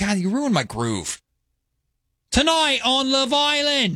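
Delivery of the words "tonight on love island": high-pitched commentator voice, like a narrator. Opening a mock show intro: Love Island narrator Iain Stirling voice. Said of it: "you sound like the commentator, Ian".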